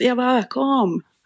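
high, slow, drawn-out call.

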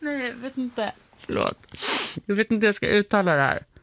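rushed, fast, laughing nervously through words. Speaker can't pronounce a word and apologizes, laughing nervously. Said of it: "Jag blir så nervös bara. Det är därför jag skrattar".

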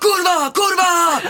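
put-on shrieking scream, very high pitch. Recounting a journey, the speaker acts out the person in front: retelling a scream. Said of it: "då skrek han kurva".

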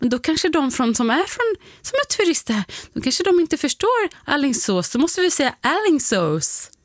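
mocking, high, wide-swinging pitch, exaggerated earnestness.

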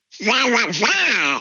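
duck-like voice.

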